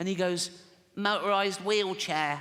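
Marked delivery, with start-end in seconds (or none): 1.0-2.4 put-on silly six-year-old boy voice. Speaker acting out six-year-old Timmy answering his father, in little Timmy's voice. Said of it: "I promised Jane I wouldn't do the voice".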